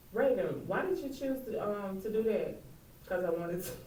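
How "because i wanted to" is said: put-on plain, straight, level, expressionless delivery. Giving an example of her answers, imitating Raven's flat direct tone. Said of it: "that direct, plain tone she would give me".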